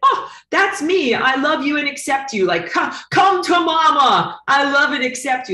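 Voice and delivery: slow, high sarcastic put-on gushing, mama stretched. Teaching a lesson, acting out an overly accepting reply, facetious mock-gushing. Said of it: "I'm being extremely facetious here".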